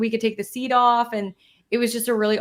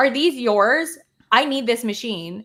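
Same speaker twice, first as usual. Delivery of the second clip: put-on rude, grumpy old-woman voice. Retelling what a rude old lady demanded, imitating a rude old lady. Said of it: "And she goes".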